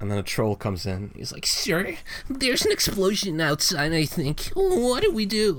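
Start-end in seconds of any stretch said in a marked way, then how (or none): 1.5-5.6 very high, swooping, snivelling little weaselly voice. The storyteller voices a troll who bursts in, in a snivelly weaselly voice. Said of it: "what voice was that?".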